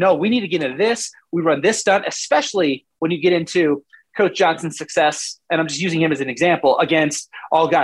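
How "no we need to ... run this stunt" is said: ordinary talk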